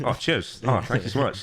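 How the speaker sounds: mock-gracious, fake-grateful, purely sarcastic tone. Retelling own replies to bullies at school: imitating own sarcastic reply. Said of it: "that was where things like sarcasm started".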